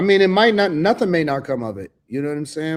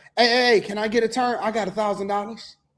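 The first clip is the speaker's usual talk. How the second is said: acted eager tone, higher; 7 semitones higher than usual. Retelling how the guys walked up to women on the stream: imitating the guys approaching women. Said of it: "That's how they was".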